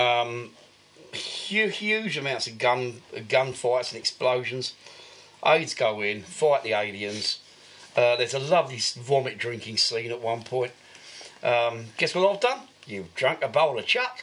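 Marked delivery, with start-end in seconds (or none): 12.0-14.2 bad New Zealand accent, faster. Quoting a line from a movie to a co-host, in a bad New Zealand accent. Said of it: "my bad impersonation of the New Zealand accent".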